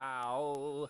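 put-on synthesized speech voice. Saying ow as Stephen Hawking: Stephen Hawking voice. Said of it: "Stephen Hawking saying ow".

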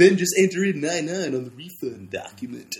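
odd, funny training-video narrator voice, same every time. Recalling an old refund-system training video, mimicking the guy in it: funny training-video voice. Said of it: "had a really funny voice".

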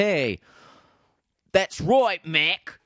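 bad put-on Australian accent, pitched very high. A host thanks a listener named mac, in a bad australian accent. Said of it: "I'm doing a bad Australian accent".

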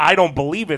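ordinary delivery

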